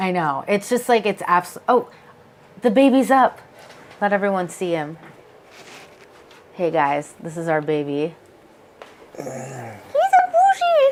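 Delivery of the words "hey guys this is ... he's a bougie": slow, sing-song put-on dog voice. Introducing their dog to everyone watching, in a dog voice. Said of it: "Sorry, my dog voice".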